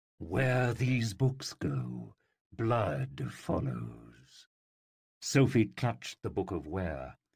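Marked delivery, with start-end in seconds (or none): 0.2-4.5 gentler, slow, grave and drawn out. A narrator reads a talking tigress answering Sophie, Acrasia, voice gentler. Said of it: "He looked at the Tigress. / whose yellow eyes were narrow. The floor beneath her was vibrating from the tigress's growls. / her voice gentler than it had been before. / [name] growled".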